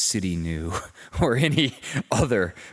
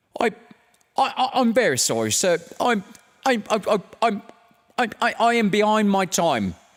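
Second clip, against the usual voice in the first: very high, halting, stuttering stammer; 13 semitones higher, 4 dB louder than usual. Narrator reading the scene where Bob Cratchit arrives late before Scrooge: stuttering Bob Cratchit voice. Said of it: "Bob Cratchit stuttered".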